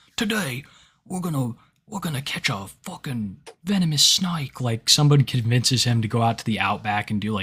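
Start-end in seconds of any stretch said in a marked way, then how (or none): 0.2-4.6 nature documentary narrator voice. Imagining someone doing a wildlife channel in the Outback: Steve Irwin impression. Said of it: "like Steve Irwin".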